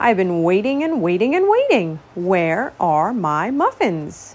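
grumbled, grumbling, complaining tone. The dragon peeks into the castle bakery, grumbling. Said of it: "he grumbled".

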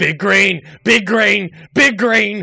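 very loud, high, booming, drawn-out yells. Acting a character who is calling out a safe word: shouting in character. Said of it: "Billy Bob's voice muffled in the distance shouting".

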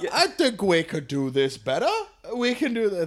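terrible, soft, put-on English accent. Joking about landlordism, voicing the British in a bad English accent. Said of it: "That was a terrible fucking English accent".

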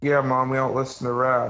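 usual speaking voice

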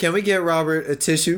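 plain

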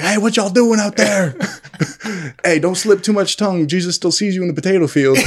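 put-on obnoxious, rowdy, high jeering heckling yell. Recounting how they yelled at a man and his girlfriend, retelling a yell. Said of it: "We're yelling at them".

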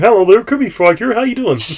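put-on frog puppet voice. Showing the other speaker an easy voice to do: Kermit the Frog voice. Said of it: "bust out a Kermit impression".

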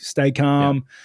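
ordinary delivery

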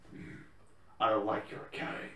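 breathy, whispered caped-hero voice. Acting out a scene between two comic characters: Batman impression. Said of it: "that Batman impression was something".

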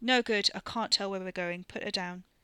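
ordinary delivery, nothing marked

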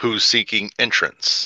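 slightly mechanical, somewhat robotic delivery. A voice behind the door's peephole answers the travelers' knocking, somewhat robotic voice. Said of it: "you hear a somewhat robotic voice say".

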